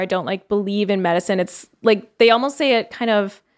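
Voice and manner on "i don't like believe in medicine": ordinary talk, nothing marked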